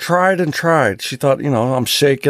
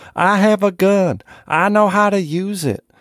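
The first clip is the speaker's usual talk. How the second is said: imitated woman screaming, higher pitch; 6 semitones higher than usual. Retelling a lady confronting four men in a car: imitating a woman screaming. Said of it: "proceeding to scream at the top of her lungs".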